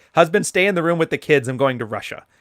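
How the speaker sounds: plain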